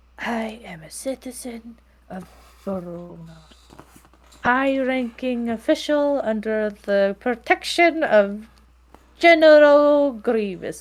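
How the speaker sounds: slow mutter under the breath. Retelling what she said while starting to draw, muttering under her breath. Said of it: "she's like under her breath".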